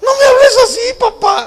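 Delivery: put-on high, loud, upset, whiny teen voice.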